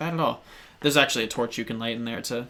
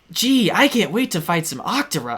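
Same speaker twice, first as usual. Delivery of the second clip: loud, goofy, swooping sing-song cartoon hero voice; 8 semitones higher, 5 dB louder than usual. Imitating how CD-i Link talks, like a goofy cartoon hero. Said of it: "He's like".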